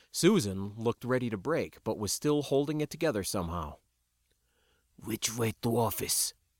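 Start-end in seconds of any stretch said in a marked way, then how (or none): 5.0-6.3 breathy, breathed under the breath. Ben Roggenston speaks over his shoulder to Susan; breathed. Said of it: "Ben Roggenston breathed over his shoulder".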